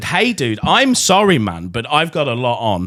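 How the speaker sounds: acted-out, irritated, fed-up, angry brush-off. Retelling a reply to a pushy message: retelling an angry reply. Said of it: "getting angry".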